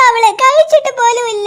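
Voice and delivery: tearful, sobbing voice. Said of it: "നീ കരയല്ലേ".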